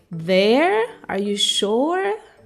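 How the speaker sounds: taken aback, surprised and faintly disapproving. Acting out a surprised person questioning where you want to go, imitating judgmental surprise. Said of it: "slightly ju- judgmental about you wanting to go there".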